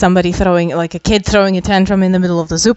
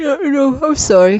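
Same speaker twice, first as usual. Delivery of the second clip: mid-yawn, slow and stretched; 7 semitones higher than usual. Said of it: "I'm yawning".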